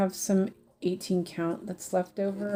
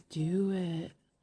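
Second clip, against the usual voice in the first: fake trance-like hypnotized voice; 4 dB quieter than usual. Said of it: "Wiggles that are, um, hypnotized by the space aliens".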